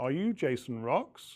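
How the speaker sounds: rising pitch on the word "Rocks". Asking someone's name as a question, rising tone on Rocks. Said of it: "when we're asking a question, don't forget we use a rising tone".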